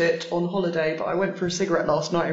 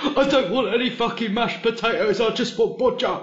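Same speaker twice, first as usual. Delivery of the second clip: play-acted tearful sobbing through the words; 4 semitones higher than usual. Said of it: "Badger crying and going".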